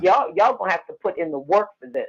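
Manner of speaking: play-acted playful but firm, joking tone. Retelling what the speaker tells people after performing a ceremony, retelling a joking warning. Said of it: "I say it in a joking way".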